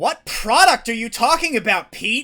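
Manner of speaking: very loud high-pitched yell. Retelling how he spoke to someone, in an unnecessarily raised voice. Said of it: "I like raise my voice t- to like sort of an unnecessary level".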